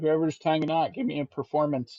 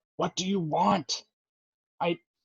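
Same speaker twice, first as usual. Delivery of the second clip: furious snarl, higher; 3 semitones higher than usual. Voicing a captive who is released from a spell: snarling and angry. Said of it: "he's just snarling and pissed".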